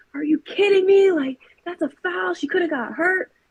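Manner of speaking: angry, high yell. Retelling screaming at the referee over a teammate's nasty foul: retelling yelling at the ref. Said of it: "I was just yelling at the ref".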